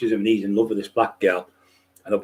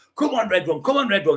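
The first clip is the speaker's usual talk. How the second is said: play-acted high, urging cheering shout; 11 semitones higher than usual. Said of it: "they're all shouting".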